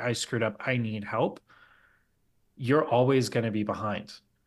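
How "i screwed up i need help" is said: ordinary talk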